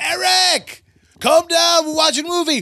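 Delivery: very high, put-on screaming.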